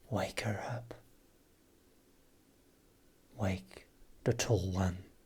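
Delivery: very faint, hushed, barely audible voice. Voicing a faint voice in a player's mind: very faint voice. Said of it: "It's very faint".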